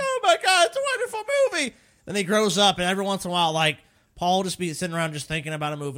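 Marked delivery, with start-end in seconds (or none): 0.0-1.7 play-acted very high, sobbing little-kid wail. Mocking Paul as a six-year-old who loved a movie, imitating little Paul crying. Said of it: "crying like".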